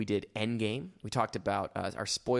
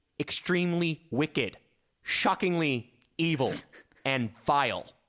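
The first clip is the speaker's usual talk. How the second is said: very slow, deliberate delivery, every word drawn out; 4 semitones higher, 3 dB louder than usual. Quoting a movie title line as the judge says it: John Malkovich impression. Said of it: "my best John Malkovich impression".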